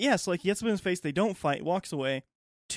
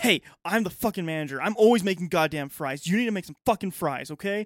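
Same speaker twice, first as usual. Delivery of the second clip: put-on angry yelling outburst, louder; 4 dB louder than usual. Retelling how a manager got up in a worker's face: imitating an angry manager yelling. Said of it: "gets up into this one guy's face".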